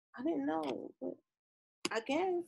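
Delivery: hesitant voice trailing off.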